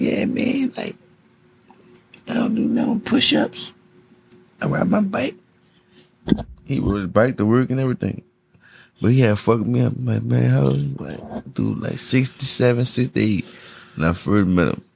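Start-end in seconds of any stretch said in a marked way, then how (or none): 0.0-5.3 small, little squeaky voice with a creaky rasp. Retelling what a quiet older man said, in his little squeaky voice. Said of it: "He had like the little squeaky voice".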